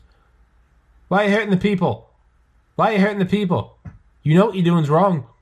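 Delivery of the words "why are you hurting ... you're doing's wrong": put-on preachy, high, loud, fast, Australian accent. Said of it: "He goes".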